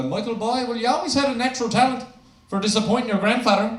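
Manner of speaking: put-on hardcore Newfoundland old man accent. Retelling what a hardcore Newfie grandfather said: imitating hardcore Newfie grandfather. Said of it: "this hardcore Newfie man".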